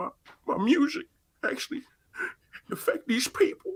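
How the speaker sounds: breathy, whispered, tearful voice. Retelling an interview where someone sat crying: imitating someone crying. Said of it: "actually in tears".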